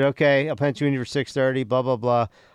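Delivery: ordinary delivery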